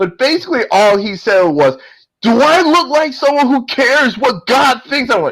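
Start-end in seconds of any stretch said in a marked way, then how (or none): 2.2-5.1 shouting, pitched high. Retelling a movie scene where a villain confronts two cops: imitating Pinhead shouting. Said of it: "Doug Bradley gives out this shout".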